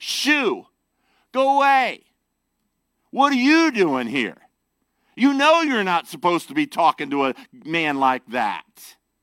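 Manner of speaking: loud, scornful, condescending voice. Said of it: "would have said it in a very condescending way".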